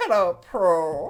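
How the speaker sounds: put-on very loud, high sitcom-girl voice, called out. Teasing someone over how they said Pearl, greet Pearl like the girls from Kath and Kim. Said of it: "You sounded like the girls from Kath and Kim".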